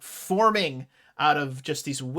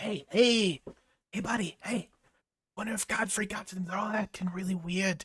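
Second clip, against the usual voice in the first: high, hushed half-whisper, close to ear; 5 semitones higher, 3 dB quieter than usual. Speaker voicing a thing half-whispering in a character's ear, half-whispering in his ear. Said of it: "it seems to be whispering something in his ear".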